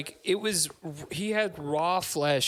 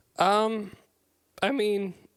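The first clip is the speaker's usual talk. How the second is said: voice cracking up high mid-phrase; 5 semitones higher than usual. Starting to answer a co-host's question about a movie scene, voice cracking. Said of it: "I don't know why my voice just cracked".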